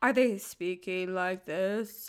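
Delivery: low, slow, flat, dragging monotone drone. Speaker demonstrates how dull podcasters would sound; slow monotone. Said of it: "and really slow".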